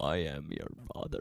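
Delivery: creepy, low, quiet acted voice. Trying to go as low as the man imitated, in a creepy James Earl Jones voice. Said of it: "That's creepy".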